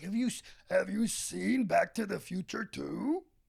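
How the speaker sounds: slow, rough, creaky, drawn-out character voice. Joking about what Oscar the Grouch says online: Oscar the Grouch voice. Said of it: "He's like".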